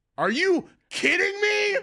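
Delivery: mock very high, unhinged, disbelieving, outraged scream. Retelling an outburst at the woman at the front: imitating own past scream. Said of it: "I literally screamed that".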